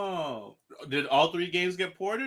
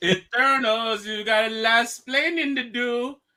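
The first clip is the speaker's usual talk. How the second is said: drawn out slowly, high pitched and loud; 8 semitones higher, 6 dB louder than usual. Reacting to a chat comment about the Eternals: terrible Salma Hayek impression. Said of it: "that's a terrible Selma Hayek impression".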